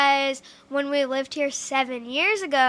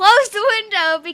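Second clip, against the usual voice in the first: mock screaming, louder and higher; 7 semitones higher, 9 dB louder than usual. Telling a story about feeding ducks with grandpa, imitating Kinsley screaming. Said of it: "Kinsley was screaming".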